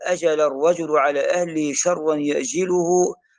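ordinary talk

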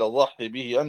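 normal talking voice

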